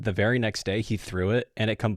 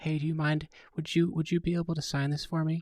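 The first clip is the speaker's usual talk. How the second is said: gentle, soft-spoken voice, pitched up; 7 semitones higher, 4 dB quieter than usual. Retelling a kid following a golfer to ask for a signature, imitating a soft-spoken kid. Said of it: "this kid very soft spoken".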